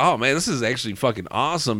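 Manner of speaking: normal talking voice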